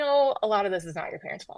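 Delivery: ordinary talk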